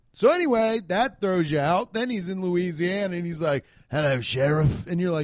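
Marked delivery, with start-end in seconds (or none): 3.9-4.9 put-on English accent. Mocking an undercover biker who never drops his voice: Jason Statham impression. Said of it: "Talks like Jason Statham".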